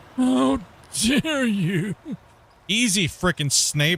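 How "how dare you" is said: put-on wheezy old woman voice, gasping for air, pitched up. Mocking how someone said a line: imitating wheezing old lady voice. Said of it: "like she was wheezing for air trying to talk".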